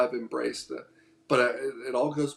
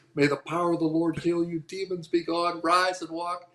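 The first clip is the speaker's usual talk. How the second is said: put-on woman's voice, yelling high; 5 semitones higher than usual. Retelling how a stranger grabbed his face and prayed: imitating a woman yelling. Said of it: "starts yelling".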